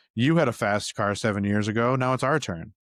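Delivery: ordinary talk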